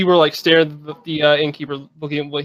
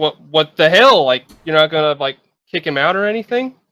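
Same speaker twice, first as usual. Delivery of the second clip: ordinary talk, nothing marked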